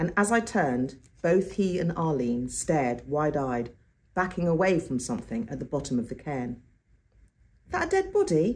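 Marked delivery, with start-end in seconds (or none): 7.7-8.6 very high-pitched, anxious, nervous, called out. Arlene, backing away from a shape at the cairn's foot, calls out nervously. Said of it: "Arlene called out nervously".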